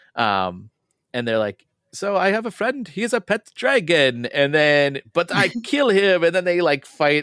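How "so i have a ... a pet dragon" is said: playful, played-up put-on Dutch accent, pitched up. Acting out what the game's characters from the Netherlands say: Dutch accent. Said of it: "I talk like this because like it's the folks are from the Netherlands".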